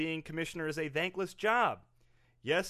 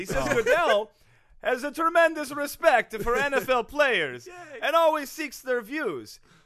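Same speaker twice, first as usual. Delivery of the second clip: very loud, high put-on Italian accent; 7 semitones higher, 8 dB louder than usual. Reading a league spokesperson's statement aloud on request: put-on italian accent. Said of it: "you pimp me into doing this accent".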